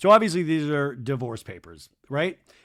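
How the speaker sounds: plain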